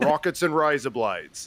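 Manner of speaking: Australian-accented speech. Saying a phrase that recenters the speaker into an australian accent. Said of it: "if I wanted to try to do the Australian accent, that phrase would recenter me".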